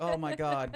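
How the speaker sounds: put-on crying, teary and emotional. Imitating a parent crying over Buzz and Woody: imitating someone emotional. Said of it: "You sound emotional like that".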